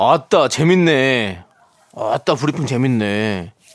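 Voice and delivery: Jeolla dialect, man's voice. A radio host reacts to the DJ briefing in a put-on Jeolla dialect. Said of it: "그냥 전라도 아저씨야".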